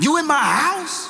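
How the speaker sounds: very high, menacing, ready-to-fight threatening tone. Retelling how someone confronted a caller on the phone: deep threatening voice. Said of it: "Bass in voice, ready to beat somebody down".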